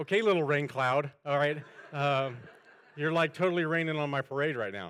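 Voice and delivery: loud, laughing, teasing tone.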